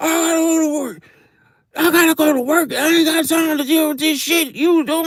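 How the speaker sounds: mock, high-pitched, scolding scream. Retelling a father at a daycare yelling at his son: imitating a father screaming. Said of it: "he's screaming at his son".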